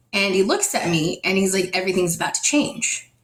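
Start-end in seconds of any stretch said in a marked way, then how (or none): 1.7-3.0 put-on quiet speaking voice. Retelling what he said after going silent: imitating someone speaking quietly. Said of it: "he gets really quiet for a second".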